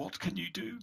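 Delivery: hushed, very quiet, high half-whisper. Repeating the woman's question when asked what she said, in a very quiet half-whisper. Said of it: "What did she say?".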